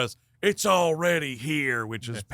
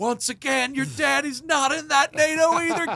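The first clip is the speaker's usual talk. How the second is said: put-on screaming movie-hero voice, higher and louder; 4 dB louder than usual. Retelling a movie scene where a character screams at her: imitating Bill Paxton screaming. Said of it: "Bill Paxton's screaming".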